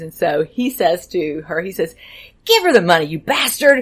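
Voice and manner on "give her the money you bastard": play-acted, loud, fed-up, impatient outburst. Retelling a child's acted line in a class scene: imitating an impatient outburst. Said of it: "just like that".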